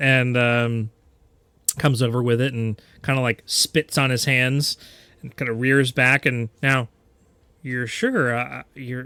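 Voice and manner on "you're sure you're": put-on Southern accent. Voicing a character about to strike with a hammer: southern accent. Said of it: "not lapsing into a, um, Southern accent".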